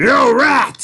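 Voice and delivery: loud, high-pitched shout, projected far.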